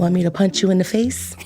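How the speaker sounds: mock-gentle, soft whisper. Speaker retells what a woman whispered in their ear during a hand squeeze: retelling a gentle whisper. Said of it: "whispers in my ear so gently".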